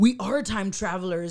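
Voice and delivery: ordinary talk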